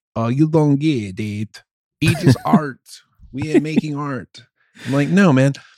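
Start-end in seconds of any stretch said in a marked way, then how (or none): 0.2-2.8 put-on French accent. Retelling what the french say when questioned, in a mock french accent. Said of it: "Is that a French accent?".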